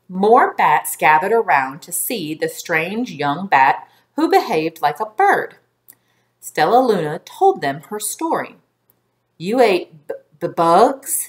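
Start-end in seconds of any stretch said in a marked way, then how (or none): 9.3-11.2 stuttering, stammering, much slower. A bat in the crowd questions Stella Luna about her story, stuttering. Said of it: "stuttered one".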